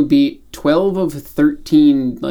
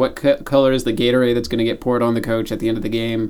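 plain

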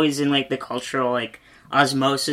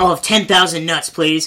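put-on yell, higher and louder; 3 semitones higher, 5 dB louder than usual. Retelling a movie gag where a character runs into a store: imitating someone yelling. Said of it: "he just yells".

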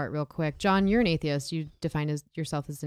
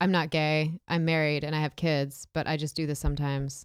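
ordinary talk

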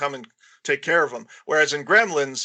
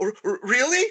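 put-on surprised voice, higher pitch; 9 semitones higher than usual. Retelling how Billy reacts when she agrees to go out: imitating surprised Billy. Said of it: "he's all surprised".

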